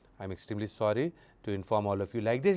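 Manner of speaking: subdued, low, hushed, sorrowful delivery. Demonstrating how to deliver sad news to a group; sad, subdued voice. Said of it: "when the person is sharing any sad news".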